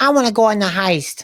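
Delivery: put-on squeaky, very high alien voice with Chicago accent. Discussing a show, the speaker voices an alien character: chicago alien accent. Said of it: "He's doing like a Chicago alien accent".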